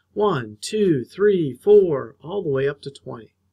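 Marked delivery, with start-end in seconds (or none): 0.1-2.1 loud counting-out voice, each number called aloud. Narrator reads Pablo counting limes as he picks them, loud counting voice. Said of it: "he counted them in a loud voice".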